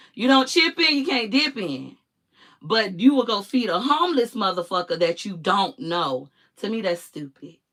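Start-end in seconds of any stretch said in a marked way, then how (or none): 0.2-2.0 put-on, high, wailing lament. Speaker repeats the family barbecue rule, in a mock wailing voice. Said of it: "in wailing voice".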